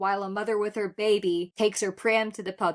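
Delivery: ordinary talk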